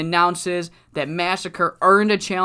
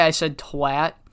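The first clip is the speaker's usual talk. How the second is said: ordinary talk, nothing marked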